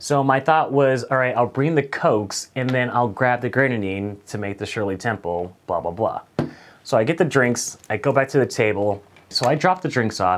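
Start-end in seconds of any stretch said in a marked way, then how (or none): none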